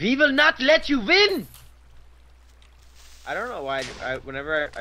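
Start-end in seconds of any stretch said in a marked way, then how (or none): 0.0-1.5 put-on high, loud, shouted Germanic accent. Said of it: "I just resort to, like, a, a Germanic accent".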